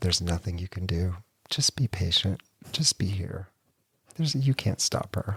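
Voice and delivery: whispering. Retelling what a woman at the bank said: imitating someone whispering. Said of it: "she kinda whispered to me".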